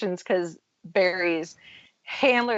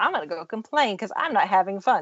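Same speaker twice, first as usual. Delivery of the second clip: put-on, dripping, very sarcastic complaining tone. Retelling a friend's remark at PopCon, imitating a friend's sarcasm. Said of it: "being very sarcastic".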